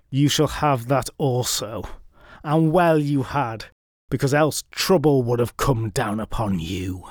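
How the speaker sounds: speaking through clenched teeth. Reading a story aloud, a character agreeing to the bargain: through gritted teeth. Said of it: "Through gritted teeth".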